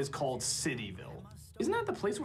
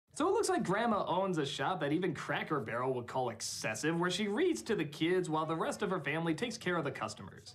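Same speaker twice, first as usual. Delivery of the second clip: ordinary talk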